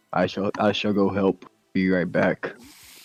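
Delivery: deep, simple-minded put-on character voice. Taking his turn in a roleplaying game, a player voices his character in a deep character voice. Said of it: "Deep voice, simple words".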